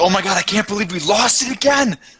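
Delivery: very high, rising, alarmed shout of dismay. Voicing a magical illusion of a person, shouting. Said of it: "It's basically going to be a person shouting".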